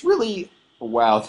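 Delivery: sudden break in the voice on "wow". Speaker explaining specialization trees in a video: voice cracking. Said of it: "That was that was a voice crack".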